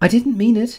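very high-pitched, begging, pleading voice. Narrator reads Alice apologizing to the offended mouse, pleading. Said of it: "pleaded poor Alice".

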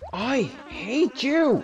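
loud yelling, shouting. Yelling at someone on a rough morning: yelling. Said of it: "for yelling at you like that".

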